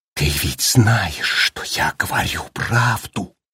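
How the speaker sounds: stunned, shocked whisper. Danny stares wide-eyed at his father, whispering in shock. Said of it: "прошептал он в шоке".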